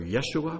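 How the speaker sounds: Yeshua, stress moved, rising at the end.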